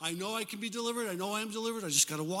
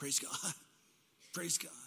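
mock-sheepish, awkward, self-conscious; 4 semitones lower, 8 dB quieter than usual. Recounting practicing a phrase in the mirror, re-enacting a sheepish delivery. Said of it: "practiced sheepishly in the mirror".

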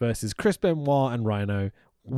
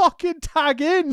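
acted, very high, loud, full-throated yell; 5 dB louder than usual. Recounting a wrestling match moment, retelling a loud shout. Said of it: "so loudly".

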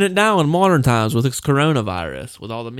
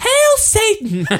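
put-on cheery woman voice, much higher pitch. Quoting a line from a horror picture, in a cheery woman voice. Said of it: "Like that one like cheery woman to say".

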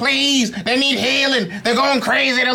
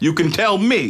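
low, deep, preacher-style voice. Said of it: "you sound too much like Denzel Washington".

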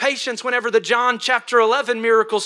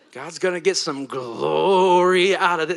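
pulpit-style preacher voice, "glory" drawn out; 6 semitones lower than usual. Speaker preaching on the text shows how to say the point, in a preacher voice. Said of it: "You got to really like have a preacher voice to".

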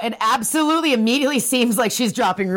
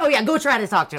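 normal talking voice

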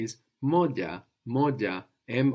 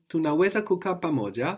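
pamoja with asking intonation; 6 semitones higher than usual. Making a Swahili sentence sound like a question, question intonation ending on pamoja. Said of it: "So you can make it sound like a question".

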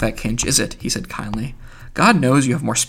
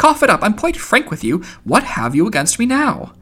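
very high, pressing, impatient tone; 9 semitones higher than usual. Reading a story, one companion presses another to speak his mind: impatient. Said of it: "Buck Mulligan asked impatiently".

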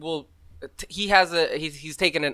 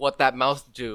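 normal talking voice

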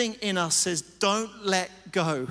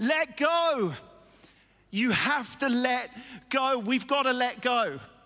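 mock calling, very slow, each word stretched out; 4 semitones higher than usual. Retelling shouting at a woman holding back a rolling car: retelling own shouting. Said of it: "I just started shouting at her".

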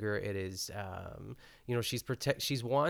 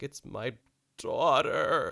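loud, put-on tearful crying voice; 3 semitones higher, 7 dB louder than usual. Praising a favorite screen crier, doing an Ellen Burstyn crying impression. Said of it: "the way that her voice goes, she's like".

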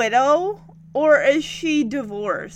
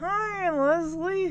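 mock gritted teeth, higher pitch, much quieter; 2 semitones higher, 6 dB quieter than usual. Retelling Ricky greeting Leslie, Ricky through mock gritted teeth. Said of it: "practically gritting his teeth".

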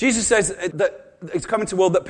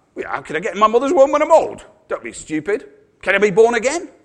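sarcastic with swooping pitch; 2 semitones higher than usual. Acting out Nicodemus answering Jesus: imitating a sarcastic reply. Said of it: "can you not hear that?".

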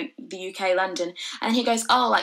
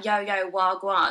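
put-on street slang delivery. Showing what people expect them to sound like: put-on slang voice. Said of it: "do you expect me to speak like a".

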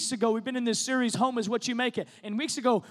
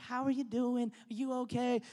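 gentle, soft, sweet, tiny little voice; 7 dB quieter than usual. Describing how their mom talks to people, imitating mom's soft little voice. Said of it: "she's got the softest little voice".

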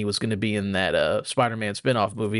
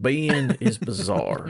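hammed-up, swooping, fake put-on country accent; 2 semitones higher than usual. Answering the rest of the podcast questions: put-on country accent. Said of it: "I'm going to answer the rest of these in the country accent".

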